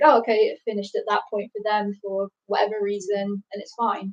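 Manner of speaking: normal talking voice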